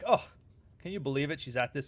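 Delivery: smug, self-satisfied, gloating, knowing tone. Imitating a husband reacting to his wife's behavior: smug reaction.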